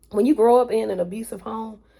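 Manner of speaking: slightly choked-up voice catching with emotion. Sharing a personal story and getting a little choked up. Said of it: "sorry, I'm got a little choked up".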